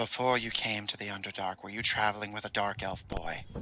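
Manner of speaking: secretive half-whisper in a low tone. Voicing a wounded character asking another privately: half-whispering in a low tone. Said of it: "whispers to you in a low tone".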